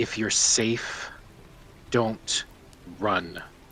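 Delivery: very quiet, low, inward murmur. Narrating a man who gently turns her face toward his eyes: very quiet. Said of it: "very quietly says".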